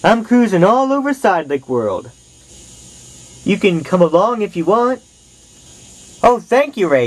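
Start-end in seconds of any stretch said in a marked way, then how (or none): 6.2-7.1 cheerful, high-pitched exclamation. Jeff thanks Ray for the offer to come along in the truck, cheering. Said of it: "cheered Jeff".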